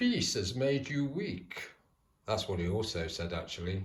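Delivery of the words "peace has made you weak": clumsy put-on villain voice, laid on slow, pitch swinging up and down. Quoting a line he said: bad Bane impression. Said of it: "Excuse the bad impression of Bane".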